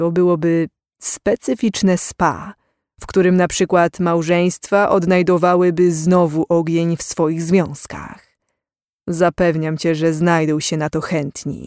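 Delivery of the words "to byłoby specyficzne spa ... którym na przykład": usual speaking voice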